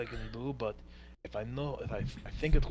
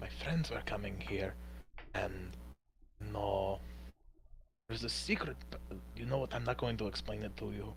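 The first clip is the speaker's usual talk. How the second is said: hushed, secretive, conspiratorial half-whisper; 4 dB quieter than usual. Playing a character who answers a question in secret: half-whispering.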